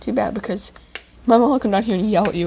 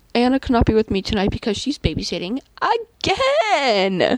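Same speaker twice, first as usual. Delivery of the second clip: plain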